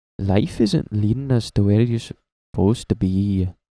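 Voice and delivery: put-on Canadian accent drifting toward Irish. Speaker imitates a guy who keeps saying this, in an attempted Canadian accent. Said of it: "that's bordering on Irish".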